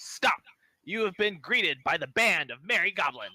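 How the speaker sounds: high, loud goblin voice crying out. A game master voices a goblin stopping the party on the road, goblin voice crying out. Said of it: "a goblin voice cries out".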